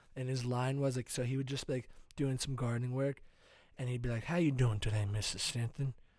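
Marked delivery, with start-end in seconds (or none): 4.3-6.0 put-on slight Louisiana Southern accent, drawling. Voicing a gardener in a made-up pulp novel: Louisiana Southern accent. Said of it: "a kinda Louisiana Southern accent".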